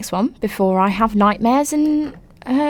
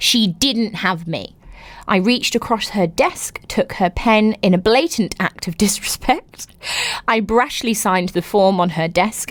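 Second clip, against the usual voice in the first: plain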